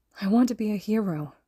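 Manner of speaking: whispering, sounding broken. Midoriya answers his kneeling teacher, Shota, in a broken whisper. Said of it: "he whispered, sounding broken".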